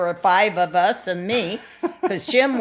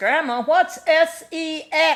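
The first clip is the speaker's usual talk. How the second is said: put-on acted, big, booming, loud, high-pitched kid voice; 8 semitones higher than usual. Retelling asking grandma a question as a little kid in the dining room: big voice. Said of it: "in a big voice".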